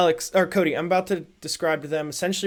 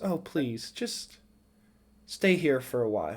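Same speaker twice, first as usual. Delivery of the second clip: low, soft, seductive, enticing voice; 4 semitones lower, 6 dB quieter than usual. A game master voices a woman walking up to a player's character, in a seductive voice. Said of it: "she walks up to you seductively and goes".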